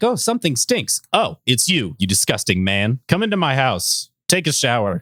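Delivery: animated cartoon-style character voice. Retelling a cartoon scene to another speaker: imitating Bulma. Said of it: "Bulma walks over and is like".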